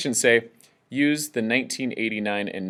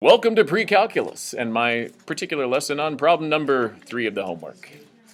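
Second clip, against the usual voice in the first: radio announcer, on-air presenter delivery; 4 semitones higher than usual. Teacher opening a pre-calculus homework lesson, in a radio voice. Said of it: "in a radio voice".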